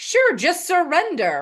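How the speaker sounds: high, slow, mocking, sarcastic sing-song.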